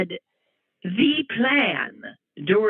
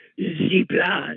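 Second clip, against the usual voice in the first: put-on, phony French accent. Showing what a fake french accent would sound like, fake french accent. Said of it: "A fake French accent would be what?".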